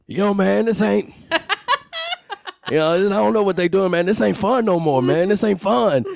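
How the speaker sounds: very high pitch swooping up and down, griping. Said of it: "that was the worst D M X impression ever".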